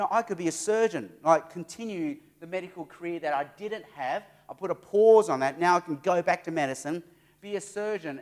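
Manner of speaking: usual speaking voice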